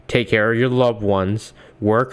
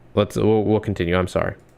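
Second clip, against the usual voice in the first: usual speaking voice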